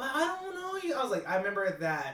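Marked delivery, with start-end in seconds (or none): 0.0-0.9 very high-pitched voice, sounding caught and guilty. Retelling what he said when in trouble: imitating his high-pitched voice. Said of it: "him going high pitched when he was in trouble".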